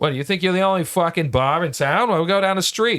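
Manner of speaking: exaggerated Boston accent. Telling how a bar cut you off, answering them in your best boston accent. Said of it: "I put on my best Boston accent".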